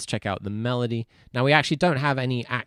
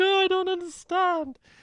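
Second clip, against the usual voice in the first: put-on very high, slow, drawn-out crying voice. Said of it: "He was just sobbing".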